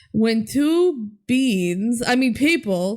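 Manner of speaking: solemn, high, slow, formal voice.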